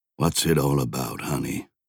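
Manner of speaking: spoken softly. Joshua stands over his wife's marker stone and asks her, softly. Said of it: "he asked softly".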